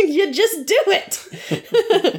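mock scolding, high, slow, with laughter.

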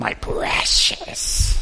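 rough, creaky put-on character voice. Joking about being told to put the phone away: Gollum voice. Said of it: "I turn into Gollum from Lord of the Rings".

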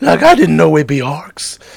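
terrible high, loud, swooping, swinging-around cartoon voice. Game master voices Shaggy during a tabletop game, as a terrible Shaggy impression. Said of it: "That's my terrible Shaggy impression".

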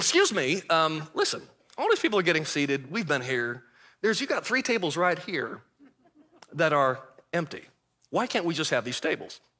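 low, businesslike, no-fuss, matter-of-fact tone. Retelling how he asked a restaurant host for the empty tables, matter-of-fact. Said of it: "I say rather matter-of-factly".

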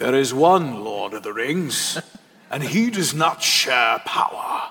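put-on old wizard voice. Making a point by doing a Gandalf voice. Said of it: "I got to do my Gandalf voice".

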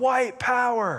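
acted-out yell, pitched very high. Retelling what a man in a passing car yelled at a neighbor: imitating someone yelling. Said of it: "rolled down his window and yelled".

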